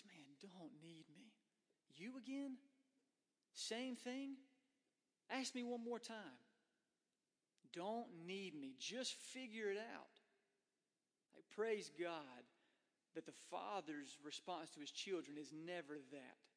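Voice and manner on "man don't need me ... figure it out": mock fed-up grumble after deep sigh, pitched up, clenched teeth. Acting out the response God never gives His children: mock-exasperated, through clenched teeth. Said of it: "with a deep sigh, with clenched teeth, and says".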